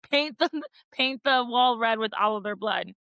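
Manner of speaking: usual speaking voice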